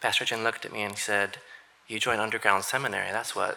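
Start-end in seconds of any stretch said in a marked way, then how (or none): 1.9-3.6 put-on deadpan, lower and quieter. Recounting a pastor's reply after the speaker's self-critique, retelling Pastor Jin's deadpan reply. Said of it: "and very deadpan".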